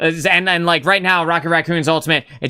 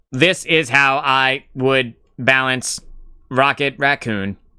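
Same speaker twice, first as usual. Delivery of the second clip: slow, mechanical, computer-style robot voice; 4 semitones lower than usual. Speaker imagining ChatGPT explaining its Rocket Raccoon changes, robot voice as ChatGPT. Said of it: "that's my best robot voice".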